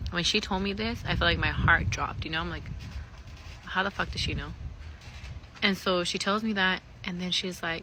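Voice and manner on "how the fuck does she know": ordinary delivery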